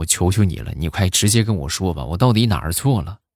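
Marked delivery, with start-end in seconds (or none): none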